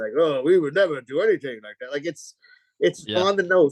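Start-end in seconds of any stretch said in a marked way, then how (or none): 0.2-1.9 play-acted stiff imperial officer voice. Mocking stereotyped prequel characters, doing their voice: Trade Federation voice. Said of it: "these Japanese imperial guys".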